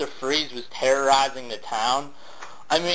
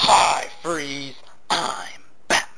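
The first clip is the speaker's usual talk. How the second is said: said with real viciousness. Complaining about a movie line reading, showing how it should go: vicious. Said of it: "you're supposed to say it viciously".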